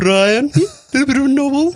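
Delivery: put-on high cartoonish baby voice. Speaker showing off an old impression he used to do, Stewie Griffin impression. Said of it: "that was Stewie Griffin".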